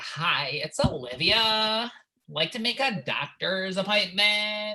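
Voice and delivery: slow, put-on phone voice. Retelling phone calls made pretending to be Olivia: imitating Olivia's voice on phone. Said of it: "She's like, "I don't sound like that."".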